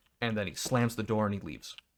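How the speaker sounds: ordinary delivery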